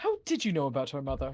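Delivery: uneasy, concerned, anxious, worried tone. In a roleplay moment, a character asks a question in a worried tone. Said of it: "realistic, like worried tone I've ever heard".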